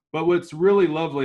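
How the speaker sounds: high, loud, sarcastic.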